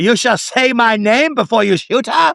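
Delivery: horrible put-on German accent, pitched very high. Discussing a movie and quoting a character's line: horrible german accent. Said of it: "That is a horrible German accent".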